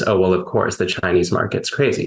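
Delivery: plain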